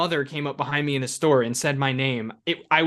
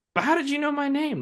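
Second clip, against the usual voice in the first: put-on high, inquisitive, curious kid-like voice, pitched up; 11 semitones higher than usual. Quoting a movie line, imitating Jake Lloyd's kid-like inquisitive delivery. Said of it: "that was very kid-like".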